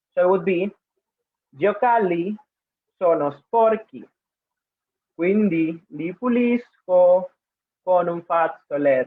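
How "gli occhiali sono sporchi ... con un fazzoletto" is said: very slow, drawn out, words spaced apart, deliberate. Repeating the same Italian sentence slower, as a participant suggested: speaking slowly. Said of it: "repeat the same sentence, but uh, slower".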